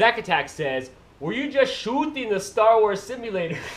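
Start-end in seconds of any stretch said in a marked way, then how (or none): 1.2-3.6 failed, pitched-up, put-on Canadian accent. Reading out a message while trying to learn the accent, bad Canadian accent. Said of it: "I can't do it".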